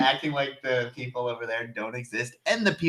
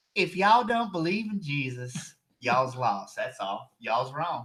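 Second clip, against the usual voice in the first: put-on North Carolina Southern drawl. Acting out a judgmental churchgoer for others: put-on Southern accent. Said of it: "Is that your Kentucky accent?".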